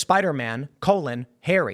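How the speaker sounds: ordinary talk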